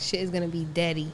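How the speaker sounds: normal talking voice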